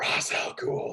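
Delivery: soft, quiet whisper.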